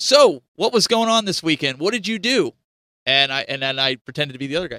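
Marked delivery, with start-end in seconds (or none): 0.0-2.5 loud, pitched-up voice projected out to the room. Showing a student what to do in an interview, projecting the voice. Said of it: "see how I'm projecting my voice?".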